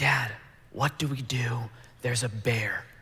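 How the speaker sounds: frightened, hushed whisper under the breath. Retelling freezing near a bear and asking dad what to do: retelling a whisper. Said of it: "and I whisper".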